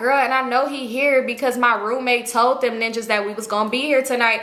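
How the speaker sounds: normal talking voice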